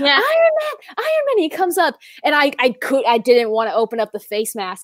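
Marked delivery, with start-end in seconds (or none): 0.0-1.4 put-on screaming child voice, much higher pitch. Retelling a kid running across a parking lot toward you, imitating a kid screaming. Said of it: "a kid ran across the parking lot in front of cars screaming".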